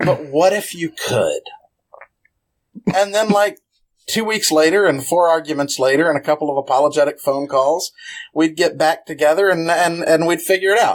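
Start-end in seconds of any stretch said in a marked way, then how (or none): 0.0-1.4 plain, ordinary talking voice. Answering a request for an impression of a colleague: Clayton Hargrave impression. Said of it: "And then he would say".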